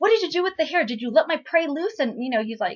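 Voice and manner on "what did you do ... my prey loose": acted, mad, high, loud freaking-out shout. Retelling a drama scene where the hunter gets mad: imitating an angry shout. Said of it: "he gets all mad".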